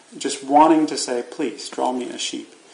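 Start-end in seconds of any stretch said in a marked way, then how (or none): 1.3-2.5 play-acted earnest, serious, sincere tone. Acting out someone asking to have a sheep drawn: imitating a serious, sincere plea. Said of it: "with this very kind of serious, sincere".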